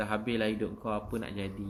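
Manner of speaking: usual speaking voice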